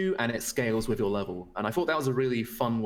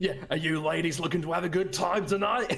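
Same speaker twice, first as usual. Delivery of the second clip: bad, fake Australian accent, pitched up; 7 semitones higher than usual. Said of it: "your Australian, uh, accent is not good".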